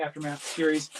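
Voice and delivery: ordinary talk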